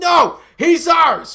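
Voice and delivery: very loud, shrill, high scream. Speaker imagines Yankee fans screaming back at him; imitating screaming fans. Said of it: "Yankee fans are screaming at me like".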